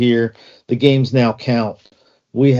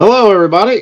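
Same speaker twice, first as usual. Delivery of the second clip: belted out high and badly; 9 semitones higher, 5 dB louder than usual. Greeting everybody at the show's start in a bad Harry Caray impression. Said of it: "sorry, that was a bad impression".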